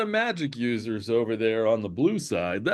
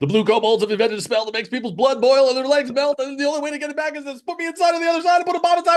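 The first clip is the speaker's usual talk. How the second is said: very fast, very high, loud rush; 6 dB louder than usual. Practicing a message to fit into six seconds: saying it really quickly. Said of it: "try to say it really quickly".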